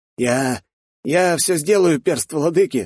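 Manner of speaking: trembling, quivering voice. A young man replies after being told he was lucky, in a trembling voice. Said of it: "дрожащим голосом вымолвил парень".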